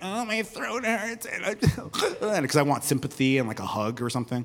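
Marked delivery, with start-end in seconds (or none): 0.0-1.3 soft, whiny, sick-sounding complaining. Recalling being sick in high school and wanting sympathy, acting out own past whining. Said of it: "complaining and whining".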